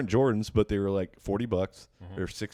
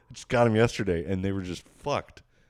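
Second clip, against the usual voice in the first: ordinary talk, nothing marked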